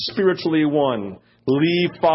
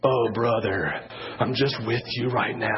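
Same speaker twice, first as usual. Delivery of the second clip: put-on pious tone, low and hushed; 5 semitones lower, 6 dB quieter than usual. Mocking how people in holy groups talk to each other: put-on holy-group voice. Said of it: "a different voice when you talk".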